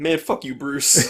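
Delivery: sassy, put-on butler voice. Retelling a movie scene, imitating the butler: sassy Alfred impression. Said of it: "a sassy bitch all throughout the movie".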